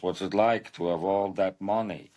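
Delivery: put-on old-time, first-generation New York accent. Imitating an actor's line from the movie Arthur: Lou Jacoby impression. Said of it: "he just leans in and goes".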